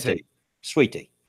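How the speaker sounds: Southern drawl, words merged. Showing how to say sweet tea the southern way: as one word. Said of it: "You gotta say it like it's one word".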